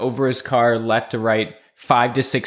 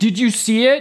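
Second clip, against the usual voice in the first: put-on, very high-pitched, panicked yell; 11 semitones higher than usual. Recalling shouting to the other person in the car while driving: retelling a yell. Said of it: "I was yelling".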